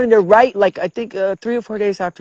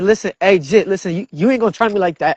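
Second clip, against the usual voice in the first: ordinary delivery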